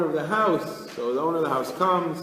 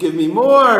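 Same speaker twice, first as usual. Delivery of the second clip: acted-out yell, louder, faster; 3 semitones higher, 11 dB louder than usual. Storyteller acting out a hungry man's words, retelling a yell. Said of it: "And he's like yelling".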